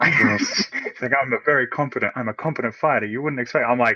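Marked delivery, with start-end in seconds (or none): 1.2-3.6 superior, condescending, talking-down tone. Imitating a character who boasts about fighting: imitating a condescending tone. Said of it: "such a condescending tone of voice".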